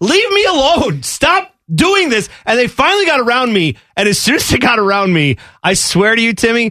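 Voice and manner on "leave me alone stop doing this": mock exhausted, high, worn-out screaming. Retelling being tailgated on an icy freeway: retelling a scream. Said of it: "I was screaming at this per-".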